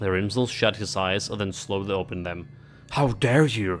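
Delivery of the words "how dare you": hissed through clenched teeth. Voicing Rimzel, replying to the player who silenced him; hissing through clenched teeth. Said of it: "He hissed through the clenched teeth".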